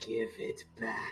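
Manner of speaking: put-on growl. Describing how they'd break the silence, doing a Batman growl. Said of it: "doing a Batman growl".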